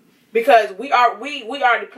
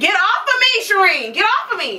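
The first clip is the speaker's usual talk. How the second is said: mock pleading, pitched way up. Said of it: "and say".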